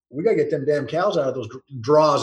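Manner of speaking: plain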